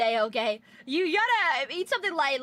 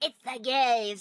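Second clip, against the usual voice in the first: voice full of disgust; 4 semitones lower than usual. Imitating what a partner might say about the couple, mock disgusted tone. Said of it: "with the disgust".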